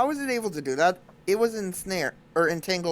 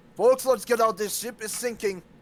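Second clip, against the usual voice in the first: pitched-up voice calling out; 5 semitones higher than usual. Warning the party to get off the ship: yelling a warning. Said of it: "I will then yell out".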